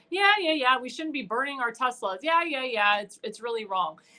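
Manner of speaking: ordinary talk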